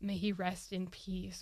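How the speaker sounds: ordinary delivery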